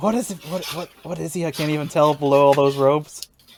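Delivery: voiceless, very soft, hushed half-whisper. In character, half-whispering over a hatchway about a robed figure: half-whispering. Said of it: "I whisper over the hatchway".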